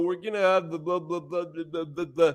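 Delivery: put-on monotone drone. Mock the way a man talks and goes on, imitating someone's droning monotone. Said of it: "he talks and drones on".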